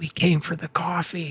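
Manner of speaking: very quiet, hushed whisper. Answering so that only Harry can hear, whispering very quietly. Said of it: "I'm gonna whisper very, very quietly".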